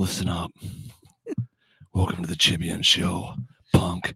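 smooth, breathy, breathed-out delivery. Answering a suggestion to sound like Clint Eastwood: Clint Eastwood voice. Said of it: "Like Clint Eastwood smooth?".

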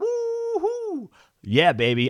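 very high-pitched, long drawn-out "woo". Opening a weekly picks video, doing a little Ric Flair woo. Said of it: "Give me a little Ric Flair".

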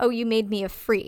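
ordinary talk

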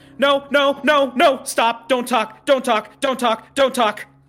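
yelling out. Narrating a scene, voicing a man who screams right after something is grabbed. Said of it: "he immediately screams".

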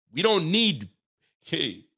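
slipping into a Nigerian accent. Ranting about a football team, sounding nigerian. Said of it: "I sound Nigerian there".

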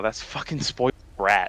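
muttered, whispered under the breath. Speaker mutters an aside to the group, whispered under breath. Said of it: "hear [name] whisper that under his breath".

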